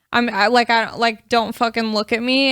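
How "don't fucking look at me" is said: ordinary delivery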